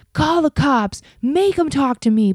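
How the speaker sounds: put-on high, screaming male voice. Retelling how an unmasked man was escorted out: imitating a man screaming. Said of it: "who was screaming".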